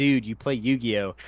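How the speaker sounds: normal talking voice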